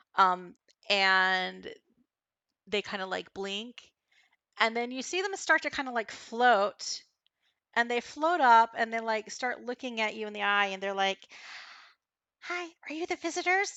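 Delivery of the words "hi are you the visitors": tiny, very high-pitched little inner voice. Describing creatures floating up and greeting the visitors, in a little voice. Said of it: "this like little voice in your head".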